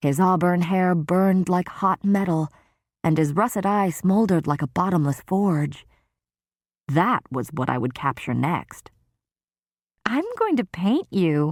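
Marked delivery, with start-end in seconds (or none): 10.1-11.5 words bubbling through giggles, high sing-song. A narrator reads the storyteller's line to a man, giggling. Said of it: "and giggled, actually giggled".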